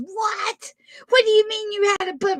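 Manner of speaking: high, upset, worked-up, fired-up outburst. Retelling how Dad told Mom about a bumper bender, imitating Dorothy getting upset. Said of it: "He had her so fired up".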